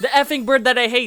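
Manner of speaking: talking loudly. Speaking to a bird that repeats everything, talking loudly. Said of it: "I'm talking loudly".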